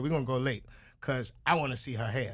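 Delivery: normal talking voice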